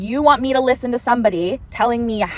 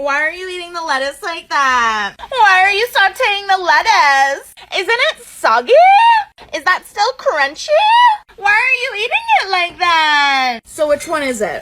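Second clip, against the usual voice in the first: mock, high, swooping, talking-down condescending voice; 8 semitones higher than usual. Speaker imitates a woman's voice for people she thinks are stupid; 'i think you're stupid' voice. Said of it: "That's my I think you're stupid voice".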